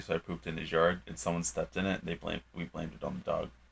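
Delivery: very soft, barely audible.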